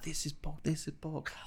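acted furious outburst, very soft, high, hushed. Retelling a father shouting at his young son over pork: imitating a father shouting. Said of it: "shouting at his son".

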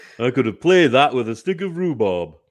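loud, good put-on Yorkshire accent. Joking about the cricket on Ashes Daily after the Test match, Yorkshire accent. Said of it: "That was a good Yorkshire accent".

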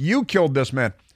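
plain

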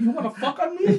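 very high, fast, words blurred together. Retelling an argument, mimicking a man's challenge to fight; imitating rushed speech. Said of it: "he's saying it so fast".

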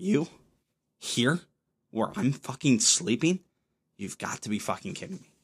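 put-on utter disgust, indignant disbelief, outburst. Voicing the dog when the speaker gets into bed late: voicing the dog's put-on disgust. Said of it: "Just absolute, utter disgust".

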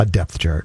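low, slightly sultry, somewhat seductive tone. Introducing the next football topic, the speaker uses a somewhat seductive tone. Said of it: "if you thought I said that in a somewhat seductive way, I did".

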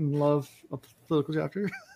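sarcastic. Introducing a politics chapter to listeners: sarcastic. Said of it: "I'm being sarcastic".

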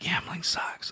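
slow, sighing whisper.

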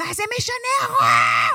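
high, loud yell with wide pitch.

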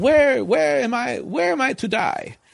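put-on poor Eastern European accent, very high, very slow. Speaker quotes a man asking questions as they go down, bad eastern european accent. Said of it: "like an Eastern European accent".

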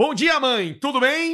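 synthetic-sounding voice, high and slow. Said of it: "É que também ninguém fala, né?".

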